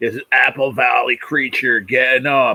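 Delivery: very heavy smoker's voice. Imitating a man's gimmick line when he keyed up, in a heavy smoker's voice. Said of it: "his voice sounded like he smoked seven packs".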